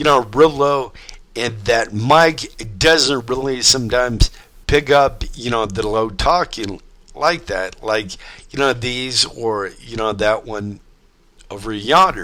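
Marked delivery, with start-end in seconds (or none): none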